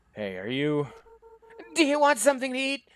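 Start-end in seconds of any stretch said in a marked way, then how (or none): 1.8-2.8 very high, loud yell rising in pitch. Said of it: "You don't have to yell".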